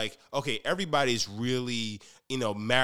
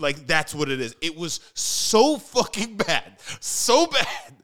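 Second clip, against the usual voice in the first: loud, rising, drawn-out, swelling yell; 4 semitones higher, 6 dB louder than usual. Complaining about a film's music to a co-host: raised voice, yelling. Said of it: "my voice is just ra-, rising".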